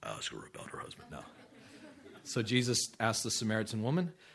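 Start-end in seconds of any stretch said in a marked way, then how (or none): 0.0-1.1 low, deep, hushed whisper. Speaker retelling Jesus and the Samaritan woman voices the Father, the Father's lower voice. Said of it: "It might have been a lower voice".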